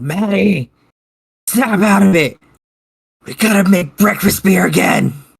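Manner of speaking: loud, high-pitched, hollered in-character yell. Yelling to snap a friend out of it: in-character yell. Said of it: "I'm gonna yell".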